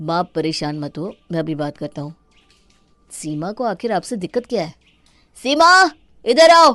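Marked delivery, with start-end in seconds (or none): 5.4-6.7 very loud, high yell across a room. In a drama, Rohit calls Seema to come over: shouting. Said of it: "क्यों चिल्ला रहे हो?".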